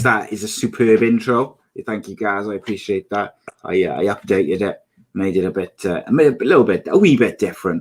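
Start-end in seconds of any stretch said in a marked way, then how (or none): none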